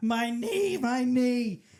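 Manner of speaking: mock cry, high and loudly screamed. Retelling how a guy screamed after his knee was smashed, imitating him screaming. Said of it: "and he's like screaming".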